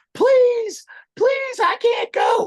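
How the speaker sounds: desperate, very high, loud, drawn-out pleading scream. Retelling what a fellow inmate yelled through the vent: imitating someone screaming. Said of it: "he starts screaming".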